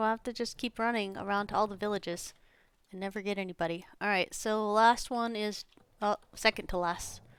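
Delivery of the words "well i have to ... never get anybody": plain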